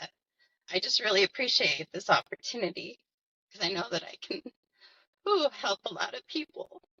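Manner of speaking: emotional voice welling up, emotion breaking through. Introducing yourself to viewers, apologizing for getting emotional: getting emotional. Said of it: "I'm sorry if I'm already starting off emotional".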